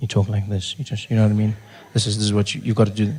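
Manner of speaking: very soft, hushed, confidential just-between-us tone. Showing the confidential voice he was told to use, very soft confidential voice. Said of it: "A confidential voice is basically you speaking very softly".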